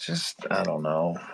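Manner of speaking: dejected. Asked when they changed their mind, the speaker answers, dejected. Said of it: "I don't know why your voice there".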